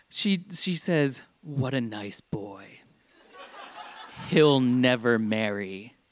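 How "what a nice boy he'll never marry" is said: creepy, possessed-sounding horror-film voice. Retelling a woman gripping the speaker's hand during a visit: Exorcist-esque horror-movie voice. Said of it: "a voice that can only be described as right out of a horror movie".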